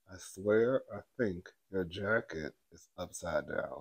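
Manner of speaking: very low, very quiet mutter through clenched teeth. Recapping a fight from a past season, the speaker quotes Dorit: retelling Dorit talking through teeth. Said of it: "talking through her teeth".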